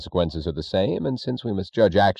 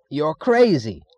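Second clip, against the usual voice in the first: shocked, very high-pitched scream; 9 semitones higher, 4 dB louder than usual. A man recovering from shock leaps to his feet: screamed. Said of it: "screamed Mr. Thompson".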